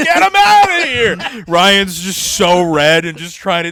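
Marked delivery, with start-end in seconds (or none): 0.0-1.4 very high, mad, angry yell. Retelling how drivers turned on a man they took for the attendant, imitating angry drivers yelling. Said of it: "all the drivers are like mad at Ryan".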